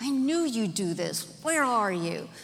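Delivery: irritated, worked-up, angry, agitated tone. Retelling how they used to imagine god speaking in the garden, imitating an angry, agitated tone. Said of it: "in an angry, agitated tone".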